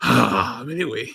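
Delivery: put-on sexy moan. Showing how not to say the name: mock erotic moaning. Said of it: "you gotta just say it normally. Not go".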